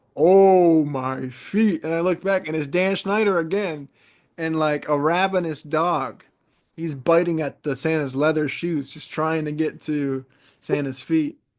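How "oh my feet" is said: put-on loud mall-style jolly old man voice. Retelling what the mall santa said as the storyteller walked past, in a mall santa voice. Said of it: "in that mall Santa's voice".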